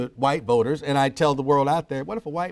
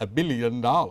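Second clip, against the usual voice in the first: best-attempt put-on English accent; 3 semitones lower than usual. Quoting a claim about saving money, the speaker does their best english accent. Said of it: "I'll do my best English accent".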